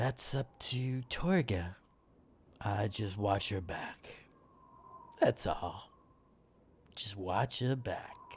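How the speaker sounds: quiet, soft-spoken, very soft, hushed words. Voicing a tall guard answering a shorter character: speaking very softly. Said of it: "he speaks very softly backwards to you".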